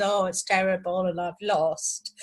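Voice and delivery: put-on despairing, gloomy voice. Imitating a brother after a tiny lottery win: imitating someone despairing. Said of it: "he goes into a deep depression".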